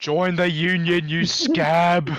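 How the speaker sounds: heckling call shouted out from the background. Joining the role-play scene as a background voice, yelling from the background. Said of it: "I'm gonna yell from the background".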